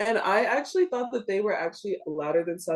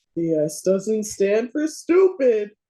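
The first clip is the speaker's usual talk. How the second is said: loud, very slow, heavily drawn-out put-on voice; 7 dB louder than usual. Answering a request for an impersonation: imitating Tara's voice. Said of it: "your best impersonation of Tara".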